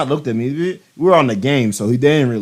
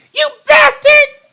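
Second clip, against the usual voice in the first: very high-pitched, loud, squeaky taunting voice; 7 dB louder than usual. Retelling a gaming friend's favorite word, imitating a friend's high-pitched voice. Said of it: "we make fun of his high-pitched voice while he said it".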